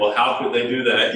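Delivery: ordinary talk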